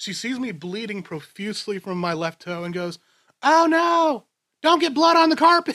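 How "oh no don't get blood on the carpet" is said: very high, very loud, shrill Southern woman voice. Retelling a friend's mom reacting to a bleeding toe: imitating a Southern mom. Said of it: "in typical Southern mom fashion".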